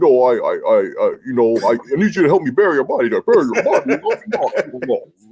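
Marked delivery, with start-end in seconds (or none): 0.0-3.8 mock distorted, disguised voice. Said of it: "you're just talking like a witness".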